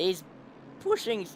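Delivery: voice breaking. Commentating as Griffin has a great run: voice cracking. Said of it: "voice crack".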